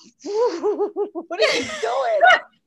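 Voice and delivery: mock shrill, slow, stretched-out, very high yell. Describing her jumping on the freshly made bed, retelling a yell. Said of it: "I'm like yelling at Elizabeth".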